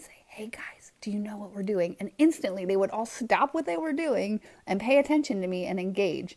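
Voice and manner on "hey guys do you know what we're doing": put-on whisper, quieter. Retelling getting the kids' attention by getting low: imitating own whisper. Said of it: "I would start whispering".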